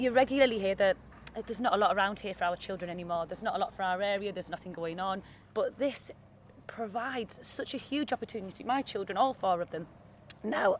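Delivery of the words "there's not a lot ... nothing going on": ordinary delivery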